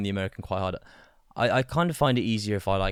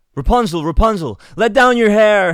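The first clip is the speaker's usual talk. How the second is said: very high, shrill, loud, flustered put-on American accent; 12 semitones higher, 13 dB louder than usual. Asked to say a Rapunzel line in an American accent, attempted American accent. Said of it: "Give me your American accent".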